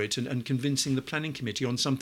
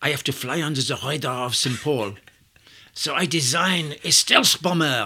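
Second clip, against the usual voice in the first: loud, laid-on, put-on French-accented English; 7 dB louder than usual. Retelling what he said as his hand went into the cardboard box, put-on French accent. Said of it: "excuse the French accent".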